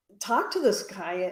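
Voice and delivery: ordinary talk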